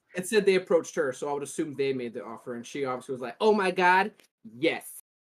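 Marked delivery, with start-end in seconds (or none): 3.4-4.8 very slow, drawn-out voice, every word stretched way out. Reading a news story about a streamer's reply, imitating Amaranth's voice. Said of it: "I do it in that voice".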